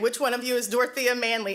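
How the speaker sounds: normal talking voice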